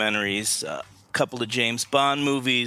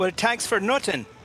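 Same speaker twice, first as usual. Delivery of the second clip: put-on Irish accent, higher pitch; 11 semitones higher than usual. Answering a welcome to the show with a joke: fake irish accent. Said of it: "You've got a great fake Irish accent".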